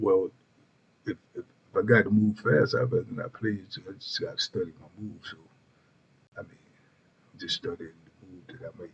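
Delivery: level, flat, one-note monotone drone. Imitating how a person will answer a question, in a monotone. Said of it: "he gonna say it in such a monotone voice".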